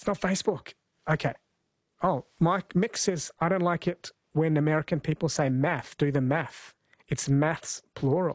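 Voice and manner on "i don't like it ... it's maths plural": plain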